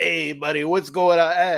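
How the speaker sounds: fake, put-on New York Italian accent. Speaker showing the voice he puts on with friends, fake New York Italian accent. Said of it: "I will do like sort of like fake New York Italian".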